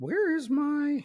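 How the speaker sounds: voice jumping way up high. Host checking which episode this is; voice suddenly goes high. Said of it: "Why did my voice just get real high?".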